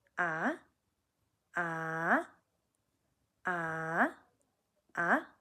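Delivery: ah sliding up, low to high, second tone. A teacher demonstrating the second tone on 'ah', rising second tone. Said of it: "we're rising up to meet the first tone".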